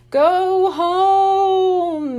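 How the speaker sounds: eerie ghostly high moan, home drawn out. A figure dressed as a ghost rises from behind the lobby desk, in a creepy moaning voice. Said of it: "it moaned in a creepy voice".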